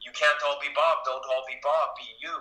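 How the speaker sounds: put-on English spoken with a Russian accent. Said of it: "as he said in a perfect Khudobin accent".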